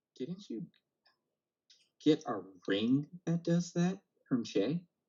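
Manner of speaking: secretive, hushed, near-silent half-whisper. Replying in character to a secret message: half-whispering back silently. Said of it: "I silently reply back".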